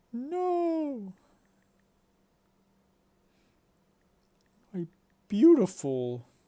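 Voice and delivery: put-on very high pathetic wailing sob, long drawn-out "no". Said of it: "And crying and stuff".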